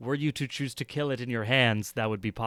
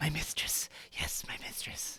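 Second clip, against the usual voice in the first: very hushed, faint whispering bat creature voice; 3 semitones higher, 10 dB quieter than usual. Voicing an intimidated bat in a player's hand, whispering bat voice. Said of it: "you just hear it, like, whispering".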